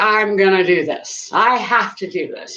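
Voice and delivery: ordinary talk, nothing marked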